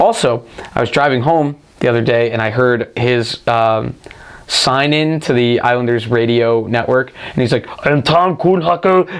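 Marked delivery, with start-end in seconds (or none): 7.8-9.2 put-on very strong, heavy German accent. Retelling a radio network sign-in heard while driving, Tom Kühnhackl German accent. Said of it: "He had a very German accent".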